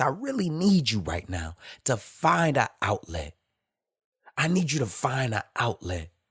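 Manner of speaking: pained, aching, hurting voice. A speaker addresses a listener directly, with pain in voice. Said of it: "hear this pain in my voice".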